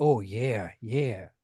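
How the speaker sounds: put-on Minnesota accent. Imitating a performer the group is discussing: Max Hardcore Minnesota accent. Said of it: "he has this Minnesota accent".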